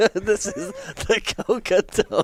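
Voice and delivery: very high voice, words broken by laughter. Introducing the Coca Donut, crying with laughter. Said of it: "I'm literally crying laughing".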